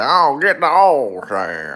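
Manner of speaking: heavy Texas drawl, loud, slow, laid on thick. Imitating how a famous Texan leans into his accent: Nolan Ryan Texas accent. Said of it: "he really leans into his Texas accent".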